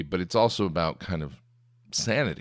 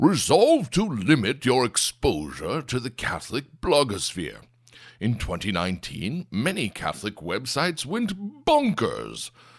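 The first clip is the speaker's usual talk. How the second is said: high, swooping, bloviating voice; 6 semitones higher than usual. Reading the writer's New Year's resolutions aloud in a George Weigel impression. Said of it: "my amazing George Weigel impression".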